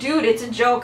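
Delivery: ordinary talk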